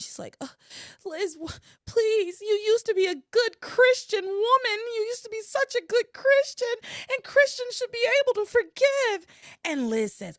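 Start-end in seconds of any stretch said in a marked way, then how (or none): 0.4-9.3 very high, tearful, distraught crying, acted out. Retelling a story, acting out a woman pleading with another woman, imitating distraught crying. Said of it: "Eve starts crying. Eve's like distraught".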